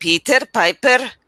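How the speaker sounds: put-on Indian-accented delivery. Giving feedback on a student's tongue-twister reading, imitating an Indian accent. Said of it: "That's very Indian".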